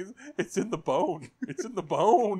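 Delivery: high, loud, drawn-out screaming cry. Retelling a movie scene where a character is speared in the leg: imitating someone screaming. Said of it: "He's screaming".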